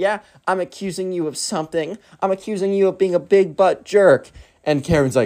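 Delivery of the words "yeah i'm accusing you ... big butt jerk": indignant, raised pitch. Retelling a quarrel between two Karens, voicing Karen two: imitating an indignant Karen. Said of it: "And Karen two's like".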